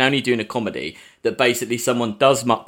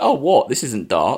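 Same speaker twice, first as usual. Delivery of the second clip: mock cheery, upbeat, breezy, unbothered tone. Retelling a line from an upbeat character in a show: imitating an upbeat character. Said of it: "who's just been kind of really upbeat all the way through".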